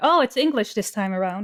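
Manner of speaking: ordinary talk, nothing marked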